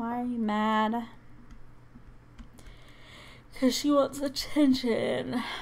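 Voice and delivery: words stretched out while yawning. Streamer asking a baby why she is mad, yawning. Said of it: "Sorry I'm yawning".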